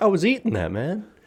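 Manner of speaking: smug know-it-all tone. Retelling own reply after someone whipped the orange: imitating a smug reply. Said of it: "playing it, like, super smug".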